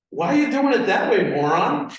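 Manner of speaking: judging, disapproving, judgmental tone. Showing a coworker's remark behind someone's desk: judgmental tone. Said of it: "It's all judgmental right there".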